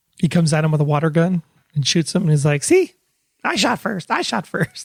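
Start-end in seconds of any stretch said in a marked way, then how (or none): 2.7-4.9 high, crazy, nutty comic voice. Acting out a scene from an imagined movie: Adam Sandler voice. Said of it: "In that Adam Sandler kind of way".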